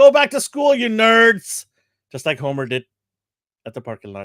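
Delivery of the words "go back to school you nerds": mock very high, loud, slow, drawn-out yell. Imitating a guest yelling at kids going back to school: imitating someone yelling. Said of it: "He's yelling at all the kids".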